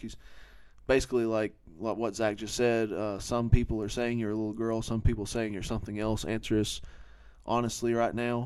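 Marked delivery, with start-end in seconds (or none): none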